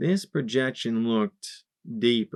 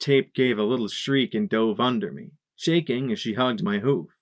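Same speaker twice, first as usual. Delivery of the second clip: ordinary delivery, nothing marked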